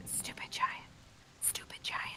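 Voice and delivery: hushed, very quiet, whispered jeering, taunting tone. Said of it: "I'm gonna whisper".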